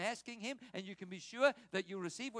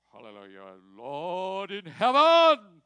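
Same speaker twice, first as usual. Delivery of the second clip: mock-pompous preacher voice, lower and slower; 5 semitones higher, 8 dB louder than usual. Telling a story about a friend who changed personality whenever praying, the speaker imitates how he prayed. mock-pompous preacher voice. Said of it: "Why are you talking like that?".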